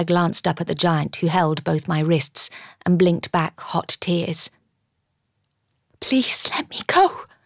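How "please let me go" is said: hushed, soft whisper under the breath. Held by both wrists by a giant, she pleads; whispered. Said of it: "I whispered".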